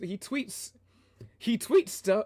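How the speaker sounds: high voice cracking mid-phrase. Describing someone's Twitter posts, voice cracking. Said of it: "my voice cracked".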